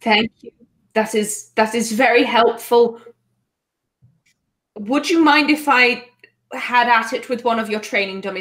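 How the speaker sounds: distressed, visibly shaken, upset voice. Thanking someone for news and asking to use a training dummy: upset. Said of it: "I'm very upset right now".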